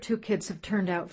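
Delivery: ordinary delivery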